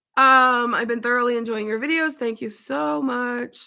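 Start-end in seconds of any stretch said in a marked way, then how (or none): 2.1-3.6 soft, slow, sarcastic-sounding delivery. Thanking a viewer for a compliment, an unintentionally sarcastic thank-you. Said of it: "That sounded sarcastic".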